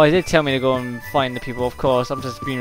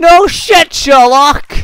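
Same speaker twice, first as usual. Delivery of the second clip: screaming, yelling; 12 dB louder than usual. Reacting to a game line, screaming. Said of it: "I had to scream that out".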